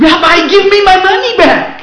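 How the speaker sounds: very loud, high-pitched, shrill, drawn-out shouting. Telling a joke, the man demands his money from the rabbi, retelling a shout. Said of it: "why are you shouting?".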